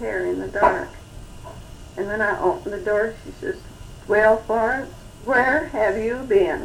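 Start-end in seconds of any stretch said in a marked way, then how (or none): 4.1-6.7 put-on loud, very stern scolding voice. Recalling coming home late, quoting her grandmother, imitating Grandma's stern tone. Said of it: "in very stern tones".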